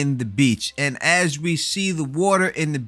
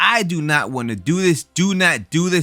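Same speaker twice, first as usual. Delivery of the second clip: usual speaking voice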